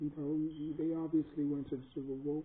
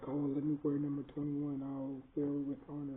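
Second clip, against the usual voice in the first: ordinary delivery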